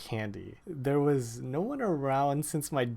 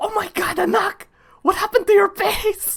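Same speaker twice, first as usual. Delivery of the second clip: very high, very loud, shrill scream; 11 dB louder than usual. Retelling how mom saw the hives on a face: imitating mom screaming. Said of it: "I remember hearing her scream".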